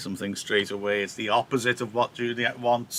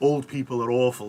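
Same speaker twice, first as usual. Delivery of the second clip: normal talking voice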